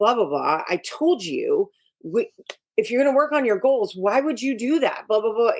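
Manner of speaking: high-pitched, nagging, shaming scolding tone. Showing how the shaming way of talking to him would go, in a shaming tone. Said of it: "the shaming piece would be like".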